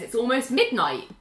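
ordinary delivery

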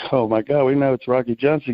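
normal talking voice

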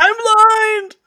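piercing raven screech, very loud and very high. Voicing a blinded raven in a game scene: raven screaming. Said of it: "The raven starts screaming".

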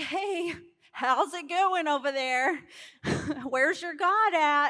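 put-on mocking, teasing, needling taunt. Retelling a story, Elijah taunts the prophets of Baal: mocking, taunting. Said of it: "Elijah's over here kinda mocking them like".

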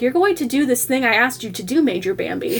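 plain

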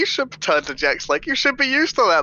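acted, in-character bluffing tone. In a tabletop game, a player has their character keep bluffing it out. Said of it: "I'm gonna still like bluff this out".

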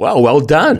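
astonished admiring tone. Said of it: "with that amount of surprise in their voice".

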